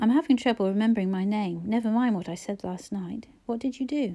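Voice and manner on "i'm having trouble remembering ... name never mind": plain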